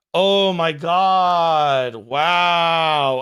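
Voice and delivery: mock deadpan, stone-faced tone. Imitating a reactor looking at his phone: imitating someone's stone-faced reaction. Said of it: "he's stone-faced".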